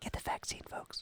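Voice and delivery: unvoiced whisper. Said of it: "I'm just whispering it".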